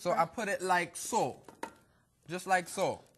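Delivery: put-on Jamaican accent. Joking while placing cake drops on paper, put-on Jamaican accent. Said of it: "My accent is no good?".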